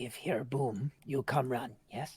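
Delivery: quiet whisper in a put-on character voice. Voicing a character who tells a companion to come if he hears a boom: whispering in character. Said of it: "you're, like, whispering to him".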